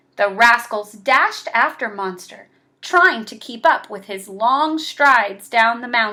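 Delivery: plain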